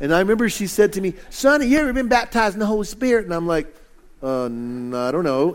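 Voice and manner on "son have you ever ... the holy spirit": pitched-up put-on Texas accent. Recalling what a woman from texas said to him; imitating her texas accent. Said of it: "she talked like this, and she's from Texas".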